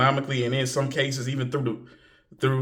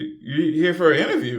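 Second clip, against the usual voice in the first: put-on shock, much higher; 3 semitones higher than usual. Retelling a front-desk lady's reply on hearing about the interview: imitating a shocked reaction. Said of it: "just shocked".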